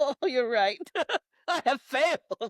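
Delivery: acted-out, high, loud, cowering, meek voice. Retelling a movie scene where a character gives in: imitating a cowering character.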